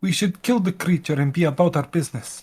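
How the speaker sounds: quiet, hushed tone, slightly high. Game narrator voicing a character behind the players, in a quiet, hushed tone. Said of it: "in a quieter, hushed tone say".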